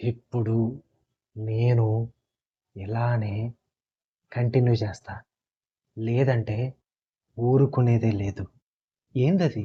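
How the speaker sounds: very slow drawl, dragged out, broken mid-phrase. Imitating a film's dialogue delivery as if at half speed: very slow, drawn-out delivery.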